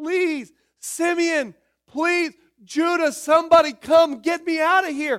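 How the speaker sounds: very high, very loud, shrill pleading scream. Telling the Bible story, the speaker acts out the brother in the well, imitating a begging scream. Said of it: "as he would scream".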